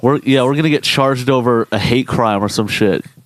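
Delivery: ordinary delivery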